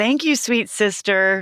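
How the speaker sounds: mock tone laid on thick with sarcasm. Retelling how the sisters still address each other: imitating a sarcastic tone. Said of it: "a really good thing to say sarcastically".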